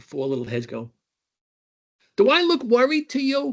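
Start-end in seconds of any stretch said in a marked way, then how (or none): 2.2-3.5 put-on very high-pitched Brooklyn accent. Retelling mom talking to her four kids under the staircase: mom's Brooklyn accent. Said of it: "In her Brooklyn accent".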